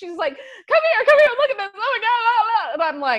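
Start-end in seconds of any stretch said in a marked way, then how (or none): 0.7-2.7 put-on panicked woman voice, higher. Retelling a ghost tour, the speaker imitates a hotel guest: imitating a woman freaking out. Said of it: "is freaking out".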